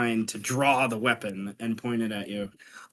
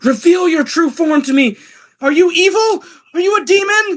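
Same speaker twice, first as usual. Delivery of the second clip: shrill, very high, booming, very loud yell; 13 dB louder than usual. A game master voices a character casting a spell on a player: yelling. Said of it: "as she yells out".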